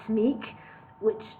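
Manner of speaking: ordinary delivery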